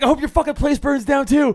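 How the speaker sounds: put-on furious shouting. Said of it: "I just get so fucking mad".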